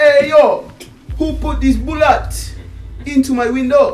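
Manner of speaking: put-on Jamaican accent, very high and very loud. Telling a story about a big guy who comes through: Jamaican accent. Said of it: "With a Jamaican accent".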